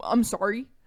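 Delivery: put-on smug, apologetic tone. Imitating a character's apology in a discussion: imitating a smug apology. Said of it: "he's, like, smug".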